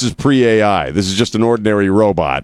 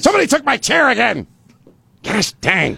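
mock very high, furious ranting fit. Joking about going full Scott Robbins, the speaker acts it out: Scott Robbins mock-angry outburst. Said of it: "He's scary when he gets angry".

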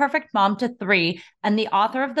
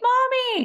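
put-on very high, screaming little child's voice. Retelling hearing a two-year-old at preschool, imitating a toddler screaming. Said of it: "I could hear her screaming".

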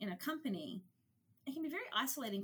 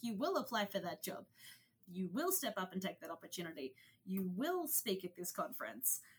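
mock forceful, driving, fairly aggressive tone. Retelling what is said to women in the organization: imitating a fairly aggressive pep talk. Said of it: "fairly aggressive pep talks".

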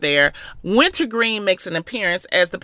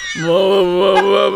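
voice dropped very deep and low; 6 dB louder than usual. Recapping a scene where Jinx overheard two others talking: Monet's deep voice. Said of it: "Monet's voice is so deep".

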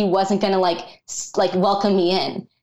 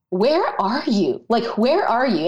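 mock anguished, desperate pleading outcry with swooping pitch; 3 semitones higher than usual. Retelling crying out to God on the floor: retelling crying out to God. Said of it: "I just cried out to God".

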